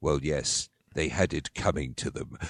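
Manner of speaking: acted evil low voice. Imitating a caught killer confessing on a detective show: evil voice. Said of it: "they do the evil voice".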